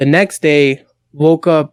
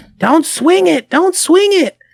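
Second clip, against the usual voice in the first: put-on very high-pitched, scolding yell; 13 semitones higher than usual. Retelling a convention story, the speaker imitates a woman yelling at her kids. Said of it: "fucking yelling at the kids".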